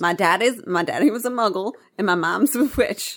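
attempted, put-on southern US accent. Playing a character quoting Seamus: Seamus line in southern accent. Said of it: "I wanted to try to do the Seamus thing in a, in a, southern accent".

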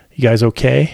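ordinary delivery

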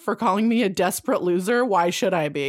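ordinary delivery

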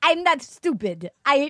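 put-on Russian accent. Retelling what a russian contestant said: put-on russian accent. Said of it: "Here comes my Russian accent".

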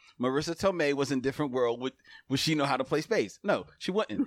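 plain

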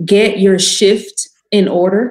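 slow, careful enunciation, each word clearly spelled out. Recommending a book, saying its title slow and carefully enunciated. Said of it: "that's why I have to say it slow".

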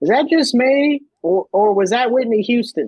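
very high, very thick Southern drawl. Speaker imitates a four-year-old girl turning to her mom after a trailer: very thick southern accent. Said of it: "in the most Southern accent imaginable".

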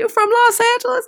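high-pitched, mocking voice.

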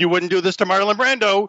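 shrill put-on screaming. Retelling how Harvey Keitel screamed over a walkie-talkie: imitating Harvey Keitel screaming. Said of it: "walkie-talkie screaming".

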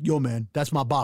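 proud, boastful, possessive tone. Retelling a stranger claiming the babka, imitating a proud stranger. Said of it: "He said it like this was his pride and joy".

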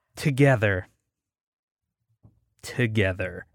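very low, hushed, menacing, sinister evil murmur. Speaker rallying listeners to keep resisting together, sounding evil. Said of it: "I just made that sound so evil".

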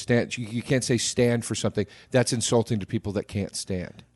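ordinary talk, nothing marked

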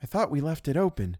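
slightly shaky, trembling voice. Reading a novel, a woman finds the front door closed: slight shake in voice. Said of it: "with a little shake in her voice".

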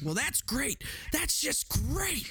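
put-on very high voice with anger building up. Retelling a scene they love, imitating Chief Brody getting angry. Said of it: "The total beta getting angry".

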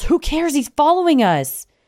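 put-on very high-pitched shout. Retelling a car chase, quoting a friend: imitating a friend yelling. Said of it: "Harry yells".

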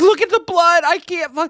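high, hysterical, sobbing crying yell. Retelling how Brenna reacted while a man got CPR, imitating Brenna's hysterical crying yell. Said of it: "crying hysterically, yelling like".

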